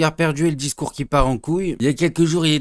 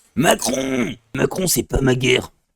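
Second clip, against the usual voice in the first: rough, gruff action-hero voice. Tell Macron that it is not your war, in a Rambo voice. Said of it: "avec la voix de Rambo".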